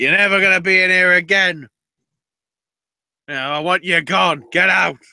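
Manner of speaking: furious, ranting, angry shouting. Retelling a backstage scene where one person orders another out: retelling someone shouting. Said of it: "she's shouting at him".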